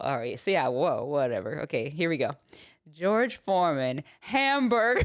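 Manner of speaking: offhand, casual, shrugged-off delivery. Retelling a behind-the-scenes infomercial blooper: George Foreman impression. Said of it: "Do your impression of the George Foreman".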